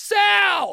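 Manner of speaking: put-on, loud, very high, stretched, drawn-out calling shout. Backing away from the mic to shout it out: shout the name Sal. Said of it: "I'm going to shout this out, so I'm going to back away from the mic".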